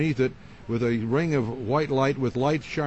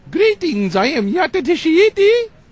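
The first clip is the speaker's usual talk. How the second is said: shrill, booming otherworldly entity voice, high and loud; 11 dB louder than usual. Showing how the medium Mark Probert would talk as his entity, do the Yata Tashiti voice. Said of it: "He'd talk like this".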